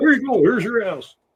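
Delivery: high-pitched cartoon bear character voice. Redoing the earlier line for the other speaker, in a Yogi Bear voice. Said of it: "I couldn't say it in my normal voice".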